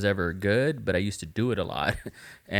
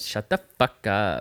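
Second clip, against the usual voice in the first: put-on valley girl voice with Los Angeles street accent.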